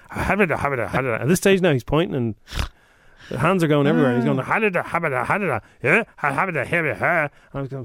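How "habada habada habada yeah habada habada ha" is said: mock thick Scottish accent, gibberish words. Retelling a ticket checker on a train: imitating strong Scottish accent gibberish. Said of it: "talking English in this very strong Scottish accent".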